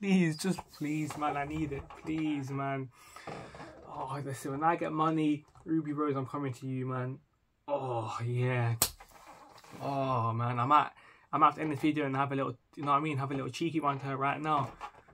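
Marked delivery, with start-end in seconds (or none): 0.0-2.9 playful, tongue-in-cheek, joking pleading tone. Addressing Ruby Rose through the camera, mock begging. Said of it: "I'm begging".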